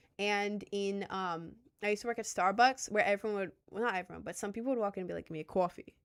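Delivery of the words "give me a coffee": put-on New York City accent. Retelling what customers said at Starbucks: imitating a New York accent. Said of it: "people talking in a New York accent".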